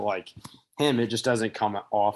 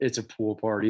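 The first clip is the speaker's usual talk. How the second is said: ordinary talk, nothing marked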